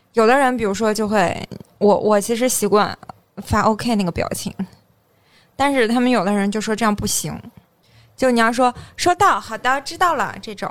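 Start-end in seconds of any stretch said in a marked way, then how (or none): 8.9-10.3 put-on expressive tone with marked intonation. Imitating how coworkers reply to the boss: put-on expressive reply tone. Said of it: "你这怎么还带语气啊？".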